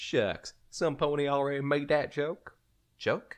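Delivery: put-on high-pitched Southern accent. Narrator reads Applejack's reply to Twilight, Southern accent. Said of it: "I'm Southern. / [name] ducked her head. / I'm Southern. / even if they ain't got a lick of sense between 'em".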